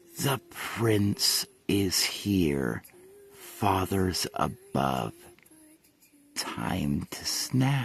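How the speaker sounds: eerie, creepy hushed half-whisper, very close to the ear. Narrating a story, voicing a horrendous creature that half-whispers in their ear. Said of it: "It whispers in our ear".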